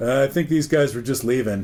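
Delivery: ordinary talk, nothing marked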